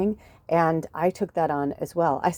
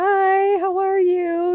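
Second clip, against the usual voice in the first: put-on very slow, high, polite and peaceful voice; 7 dB louder than usual. Retelling how mom greeted the new people: imitating mom's polite greeting.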